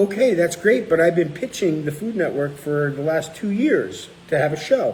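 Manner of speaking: ordinary delivery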